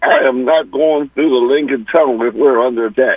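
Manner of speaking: normal talking voice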